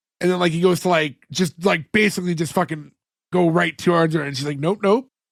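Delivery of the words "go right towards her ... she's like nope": normal talking voice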